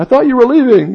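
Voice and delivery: mock happy, cheerful voice, very high chirp. Retelling what Debbie said when the speaker came back in, imitating Debbie's happy, cheerful voice. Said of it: "with a happy, cheerful voice".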